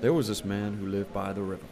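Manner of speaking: put-on American accent. Retelling a story about a man by the river: American accent. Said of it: "I'm going to do it in American accent".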